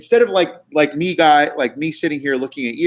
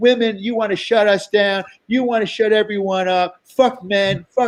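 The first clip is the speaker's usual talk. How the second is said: put-on screaming rant, higher; 5 semitones higher than usual. Retelling another comic screaming at someone on Zoom: imitating someone screaming. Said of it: "she starts screaming at her".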